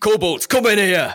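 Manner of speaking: big, bellowing, booming, very loud call. Voicing a dragonborn father calling the kobolds in: booming voice. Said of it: "In a booming voice".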